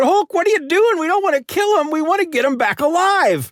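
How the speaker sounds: put-on frantic, panicky, high, freaked-out pleading. Retelling a comic scene where the Hulk throws a boulder: imitating Spider-Man freaking out. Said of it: "Spider-Man is freaking out".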